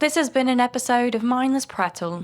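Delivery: put-on British accent. Saying the podcast outro after being asked to pick an accent: British accent. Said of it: "But I said not British".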